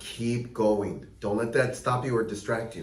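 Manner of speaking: ordinary delivery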